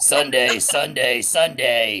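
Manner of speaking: dramatic movie trailer announcer voice. Asked to read something aloud, the speaker opens in a movie voice. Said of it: "I'm gonna use my movie voice".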